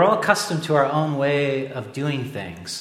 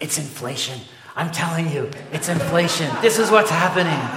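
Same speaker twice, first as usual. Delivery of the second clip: mock worked up, eager, excited, rising insistent tone; 3 semitones higher than usual. Retelling what a wife said across the table: imitating someone excited. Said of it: "My wife got all excited".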